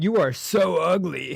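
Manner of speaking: wrestler trash-talk promo voice. Retelling a movie character's sudden insult: WWE wrestler trash talk.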